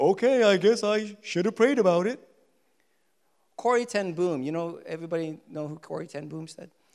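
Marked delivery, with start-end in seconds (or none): 0.0-2.2 dry sarcastic tone. Speaker acts out what people say sarcastically: imitating a sarcastic remark. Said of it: "say sarcastically".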